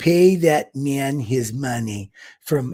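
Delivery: very slow, clumsy, fake Russian accent. Speaker quoting a line for a super chat to Roman, in a bad Russian accent. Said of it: "that's a bad Russian accent".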